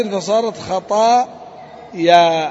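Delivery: خطايا said very slowly, carefully, each sound deliberate.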